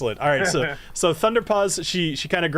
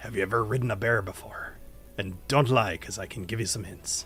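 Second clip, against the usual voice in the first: very low, hushed, leaning-in half-whisper; 8 semitones lower, 7 dB quieter than usual. Game master voicing a woman leaning down to a player, half-whispering. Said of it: "she leans down to you and she kind of whispers".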